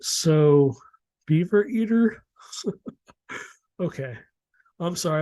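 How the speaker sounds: talking through laughter. Introducing the next creature on the list, laughing while talking. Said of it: "I'm laughing".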